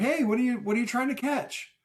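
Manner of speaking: very high, calling-out yell. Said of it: "we start yelling to him".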